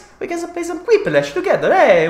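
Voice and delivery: put-on Italian accent. Inviting chat to play Quiplash together: put-on Italian accent. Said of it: "With the Italian accent".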